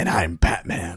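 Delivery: hushed, breathy, whispered superhero voice. Introducing themselves, the second speaker gives his name: Lego Batman voice. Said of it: "talk in our Lego Batman voices".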